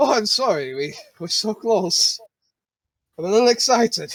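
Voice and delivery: exasperated, fed-up speech at a hyper pace. Voicing a character caught hurrying by the party: exasperated in-character line. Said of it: "he looks exasperated and goes".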